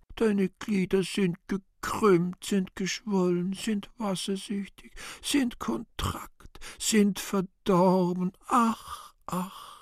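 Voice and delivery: quiet childlike mock whimpering, soft. In a play, a character imitates the old man: quiet whimpering, childish imitation. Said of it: "leise wimmernd mit tiefer Teilnahme, den Alten kindlich imitierend".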